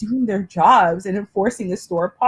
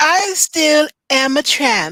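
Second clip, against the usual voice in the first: slow, high-pitched, put-on classy, cleaned-up posh accent; 5 semitones higher than usual. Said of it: "it sounds more classy".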